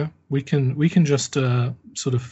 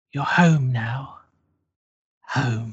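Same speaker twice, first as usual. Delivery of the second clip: put-on elderly woman's voice. Running a tabletop game, voicing what players hear on the stairs; old woman's voice. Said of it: "you hear an old woman's voice".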